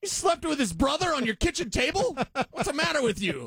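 very high-pitched voice with a stand-up comic's stage delivery. Acting out calling up someone at a comedy show: Sam Kinison impression. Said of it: "I wanna do like Sam Kinison used to do".

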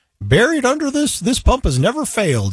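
put-on very high, swooping old prospector voice. Describing an old church video, the speaker reads the pump note in old prospector voice. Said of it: "it's got that old prospector voice".

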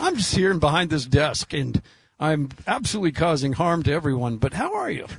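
mocking, swooping infomercial pitchman ad-host voice. Retelling a betting infomercial before a basketball game: imitating DraftKings infomercial guy. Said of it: "a fifteen-second infomercial that DraftKings just kinda dropped in".

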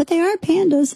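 very high, small, tiny inner voice. Retelling what an inner voice said back to the speaker: tiny inner voice. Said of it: "I had a tiny voice in the back of my head go".

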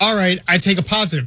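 ordinary delivery

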